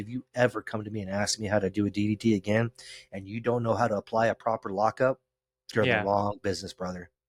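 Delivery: grave, no-nonsense, dead serious tone, acted out. Retelling a warning to a new wrestling student: retelling own dead serious warning. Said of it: "I was dead serious with him".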